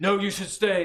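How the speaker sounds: booming, loud and high. As the dwarves run for the door, the narrator voices Murad, Murad's booming voice. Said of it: "so Murad's voice just booms".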